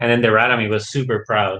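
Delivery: normal talking voice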